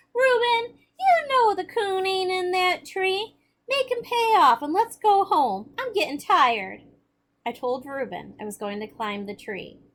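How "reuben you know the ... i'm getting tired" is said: shrill, very high, whiny complaining tone. Narrating a story, reading Rainy's line to Reuben, whining voice. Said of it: "In a whining voice".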